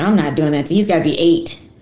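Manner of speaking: usual speaking voice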